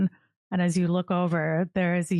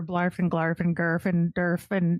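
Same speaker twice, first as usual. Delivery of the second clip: ordinary delivery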